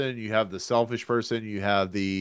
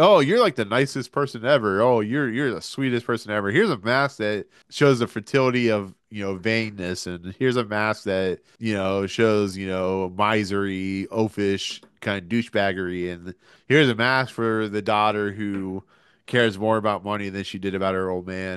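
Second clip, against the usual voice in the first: ordinary delivery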